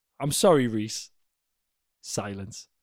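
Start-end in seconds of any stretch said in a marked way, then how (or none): 0.2-1.1 put-on voice sounding like a baby. Retelling a friend's apology from the back of the car: imitating someone sounding like a baby. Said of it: "like a, like a baby".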